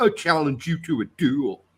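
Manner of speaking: put-on casual dude voice without a French accent. Retelling how Keanu Reeves delivered a line in a French film: imitating Keanu Reeves. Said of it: "He's like".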